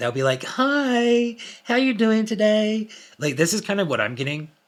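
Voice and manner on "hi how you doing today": very high, very slow, drawn-out fake tone. Describing how emotionless people greet someone, imitating a really fake tone. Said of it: "have like a really fake tone".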